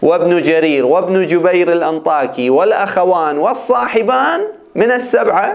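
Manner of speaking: normal talking voice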